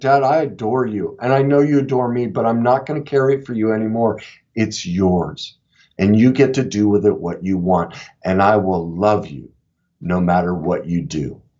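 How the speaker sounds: mock very low, tender, loving tone. Speaker retells what they said to their dad: retelling a loving tone. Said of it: "I just I very lovingly said".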